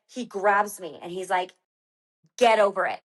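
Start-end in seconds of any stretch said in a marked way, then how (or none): 2.4-3.0 put-on serious, firm voice. Retelling how a partner grabbed her during a race: imitating a serious order. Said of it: "so serious".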